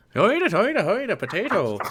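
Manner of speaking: put-on barely passable Irish accent. Asking whether the accent sounds good, a speaker tries out a bad irish accent. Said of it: "Think I'm doing a good Irish accent?".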